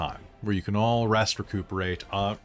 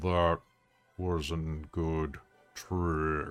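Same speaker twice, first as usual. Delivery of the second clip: deep, soft, rumbling voice; 5 semitones lower, 5 dB quieter than usual. Game master voicing the Treant speaking for the first time: deep rumbling voice. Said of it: "He'll say in this deep, rumbling voice".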